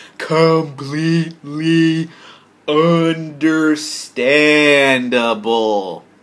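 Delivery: slow, deliberate, each word laid out one by one. Commenting on someone taking down his video, repeating the phrase, said slowly. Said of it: "I'll say it slow again".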